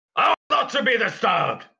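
put-on high, shrill scream. Voicing a disturbed man who snaps toward a player: screaming in character. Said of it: "And he screams".

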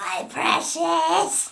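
loud, high-pitched creature voice, crying out. Right after the podcast intro, a host breaks into a Smeagol impression. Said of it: "Good impersonation".

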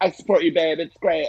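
cartoonish put-on reality-star voice. Imagining how she reacts to his episodes, in a Kardashian cartoony voice. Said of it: "in that very kardashian cartoony voice".

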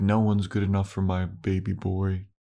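acted creepy motherly voice. Discussing characters, a speaker imitates a mother talking about her son: creepy mother impression. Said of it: "it makes it creepy when you say it like that".

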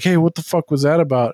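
acted-out loud, angry, pissed-off voice. Retelling a movie scene: retelling an angry outburst. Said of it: "He's all pissed off".

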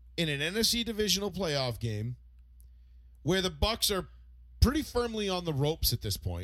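normal talking voice

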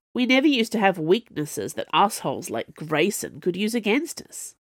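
ordinary delivery

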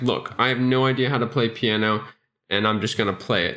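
ordinary talk, nothing marked

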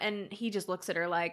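plain

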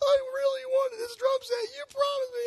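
put-on tearful, crying kid voice, very high. Retelling his twelve-year-old self pleading with his dad, imitating his own crying. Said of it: "I'm "Losing my mind."".

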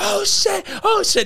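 yelling, pitched way up. Retelling being bitten by a snake, yelling. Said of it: "and I'm yelling".

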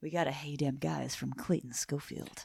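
whispering. Announcing a listener's greeting on the podcast; whispering. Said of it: "Why are we whispering".

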